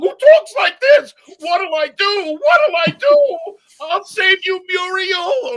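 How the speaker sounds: very high, very loud, slow drawn-out wail. Showing the fans the cartoon dog voice he does: Courage the Cowardly Dog voice. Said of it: "I'm the voice of Courage the Cowardly Dog".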